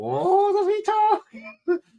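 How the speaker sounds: very high, slow, squeaky female voice. Retelling a sketch the group performed: Terry Jones-style female voice. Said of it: "I sounded so much like Terry Jones when I put on a female voice".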